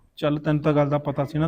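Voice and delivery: ordinary talk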